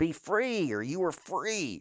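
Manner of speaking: all-out, blasting, high-pitched yell. Showing off a powerful voice, the speaker announces a line to yell, yelling. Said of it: "I'm going to yell".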